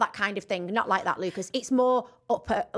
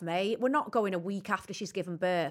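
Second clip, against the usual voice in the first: usual speaking voice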